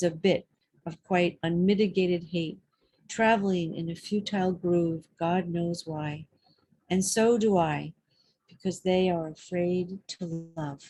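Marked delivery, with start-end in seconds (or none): none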